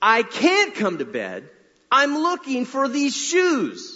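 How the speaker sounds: very high-pitched swooping holler. Retelling how she answered through the door when he called her to bed: retelling a holler through a door. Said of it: "hollers through the door".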